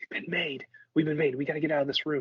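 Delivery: hushed whisper. In a scene, speaking aside to two companions, whispering. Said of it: "and I whisper like".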